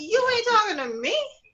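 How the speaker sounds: indignant tone. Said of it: "I wanted to say".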